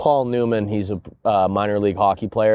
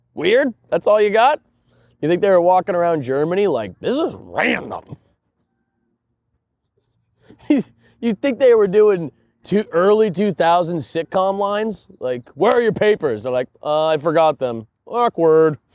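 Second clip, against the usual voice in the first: stand-up comedy delivery, higher; 10 semitones higher, 3 dB louder than usual. Showing the others how a stand-up bit is performed: stand-up comedy bit delivery. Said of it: "this is an impression of me doing a bit".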